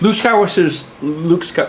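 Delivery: slurring, smeared speech with run-together words. Speaker, after taking a drink, starts explaining something to listeners, slurring words. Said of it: "Oh my God, I'm slurring".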